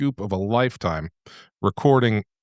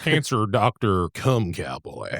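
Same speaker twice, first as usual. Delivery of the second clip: put-on Texas southern drawl. Speaker says a book character's nickname the way it should be said: texas southern drawl. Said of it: "you got to say it in that Texas".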